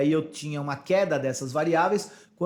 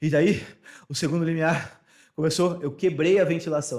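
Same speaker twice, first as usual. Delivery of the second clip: breathless panting, slower pace. Describing passing the second breathing threshold mid-exercise, panting, out of breath. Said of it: "Eu tô muito ofegante, tá difícil de falar".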